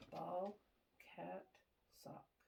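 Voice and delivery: very soft, barely voiced whisper. Giving a whisper test from behind the listener's right side: whispering. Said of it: "I'm gonna whisper three words".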